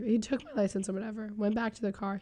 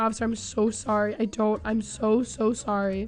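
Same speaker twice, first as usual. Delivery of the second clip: acted, tearful, sobbing voice; 3 dB louder than usual. Retelling apologizing to a police officer after being pulled over: imitating own past sobbing. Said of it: "I started sobbing".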